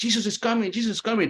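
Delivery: put-on a kid yelling out, high-pitched. Retelling a client's past-life memory as a boy: imitating someone yelling. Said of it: "he started yelling".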